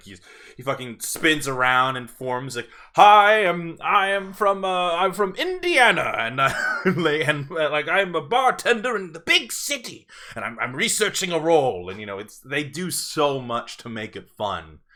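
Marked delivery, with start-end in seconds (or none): 2.9-11.9 theatrical stage-actor declaiming, high and loud. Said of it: "he's speaking like a thespian".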